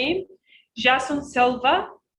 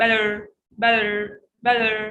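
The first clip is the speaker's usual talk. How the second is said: "better" said with an American accent; 3 semitones lower than usual. Showing a learner how to say the word: american accent. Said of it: "in American accent".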